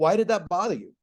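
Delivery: plain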